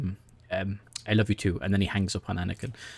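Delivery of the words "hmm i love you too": usual speaking voice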